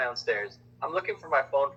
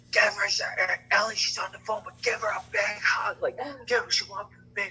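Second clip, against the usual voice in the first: put-on loud whisper, much higher pitch; 8 semitones higher than usual. Retelling what a man said in the kitchen, retelling a loud whisper. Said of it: "making like loud whispers like that".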